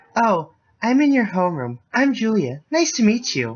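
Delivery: cute, high, loud put-on anime girl voice. Introducing herself after the angry professor storms off, in an anime girl voice. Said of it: "just do the anime girl voice".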